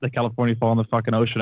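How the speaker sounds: usual speaking voice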